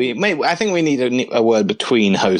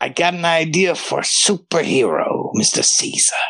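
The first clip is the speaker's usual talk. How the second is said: put-on old man voice, higher; 6 semitones higher than usual. Acting out a scene for a partner playing Julius Caesar: Stan Lee impression. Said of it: "you sound a little bit like Gilbert Gottfried".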